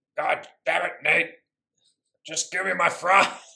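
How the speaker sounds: put-on monster puppet voice. Acting out a scene where Sully demands his fries: Sully voice like Cookie Monster. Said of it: "Why does Sully sound like Cookie Monster?".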